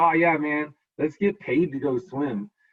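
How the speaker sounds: slow, sarcastic tone. Showing students how to play along with a joke: acting out sarcastic playing along. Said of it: "they were being sarcastic".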